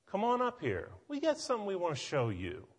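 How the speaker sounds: mocking, sarcastic, sing-song taunting tone. Retelling the enemy calling two men over: acting out a sarcastic taunt. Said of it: "can you not hear the sarcasm in that".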